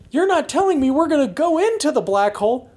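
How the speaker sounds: very high-pitched, incredulous, disbelieving whine.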